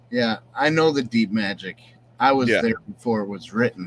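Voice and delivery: ordinary talk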